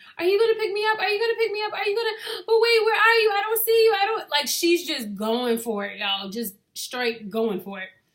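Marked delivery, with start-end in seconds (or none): 0.2-4.5 very high, rushed, sobbing hysterical crying. Speaker retells a girl on the phone with her mom, imitating hysterical crying. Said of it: "and she's crying hysterically".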